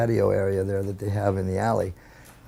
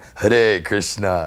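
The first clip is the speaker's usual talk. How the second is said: mimicked dark, deep voice. Retelling copying the greeting back: mimicking a dark, deep voice. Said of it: "but I mimicked him".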